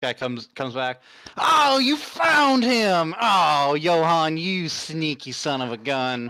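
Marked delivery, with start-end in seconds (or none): 1.4-6.3 bad, very slow, hammy Southern drawl. Playing a guy who comes back and finds him, bad southern accent. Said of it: "I like give a bad southern accent".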